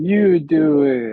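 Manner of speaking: put-on high, loud child's voice. A parent copying how their kids usually say it, imitating their kids. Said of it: "Like they say, that's how they say it".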